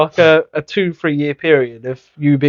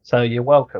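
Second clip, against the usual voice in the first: ordinary talk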